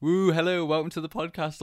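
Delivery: loud shouting. Telling the podcast audience what you're not used to doing, shouty podcast welcome. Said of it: "all shouty".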